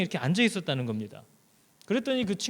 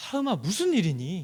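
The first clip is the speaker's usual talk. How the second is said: put-on eager, curious tone. A tired father acting out how he asks his youngest what happened: feigned eager curiosity. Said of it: "너무 궁금하다는 듯한 표정과 말투로".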